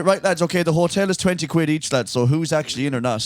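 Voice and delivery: normal talking voice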